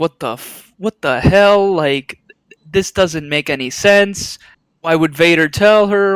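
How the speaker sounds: normal talking voice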